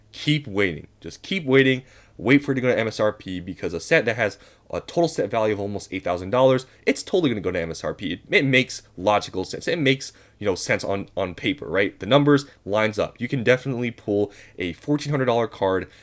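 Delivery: ordinary delivery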